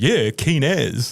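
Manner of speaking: mock sarcastic delivery. Imitating how Dan Carter said he was keen: imitating sarcastic Dan Carter. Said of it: "a very sarcastic keen as".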